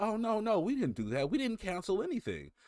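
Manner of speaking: very high-pitched, defensive, backpedalling voice. Mocking the company's denial during the purchase case: imitating the company's denial. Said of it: "And they're like".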